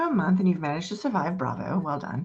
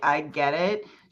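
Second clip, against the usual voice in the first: smug, smarmy, sarcastic wisecracking tone; 3 semitones lower than usual. Voicing a character answering a warning: smarmy, sarcastic. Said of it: "starts to say something smarmy and sarcastic".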